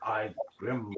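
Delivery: cartoon character voice. Retelling a cartoon clip that sounds hilarious: imitating the cartoon guy's voice. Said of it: "He's like".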